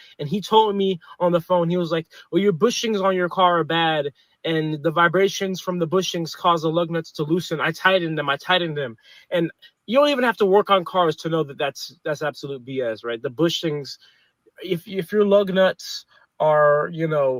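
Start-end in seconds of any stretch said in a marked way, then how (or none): none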